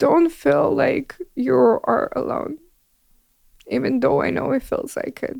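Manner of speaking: high, tearful crying voice. Giving her biggest suggestion to everybody while apologizing for crying, crying. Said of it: "sorry for crying".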